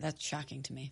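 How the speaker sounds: barely audible, very quiet, hushed whisper. In a chat about never having had caviar, speaker reacts with shock: whispering. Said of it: "Why are you whispering?".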